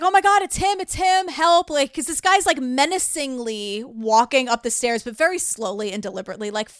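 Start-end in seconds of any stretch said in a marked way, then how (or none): 0.0-1.7 mock panicked screaming, much higher, slower. Recounting a story, the speaker acts out a character screaming in panic. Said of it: "And he's screaming".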